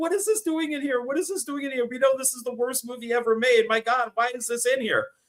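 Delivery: very high-pitched words spoken through laughter. Retelling a comic reaction to something found in the house, imitating laughing while talking. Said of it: "like laughing and just be like".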